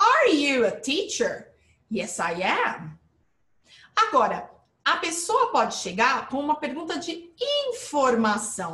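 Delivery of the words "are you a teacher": rising end tune, pitch climbs on teacher. Explaining confirmation questions in English, pitch rising at end on teacher. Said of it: "olha a entonação lá em cima".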